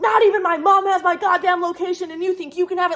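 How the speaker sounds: mock indignant freak-out. Speaker retells a man's text reply to her angry messages, imitating him freaking out. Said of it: "I'm like screaming at this man".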